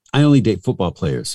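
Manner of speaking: ordinary delivery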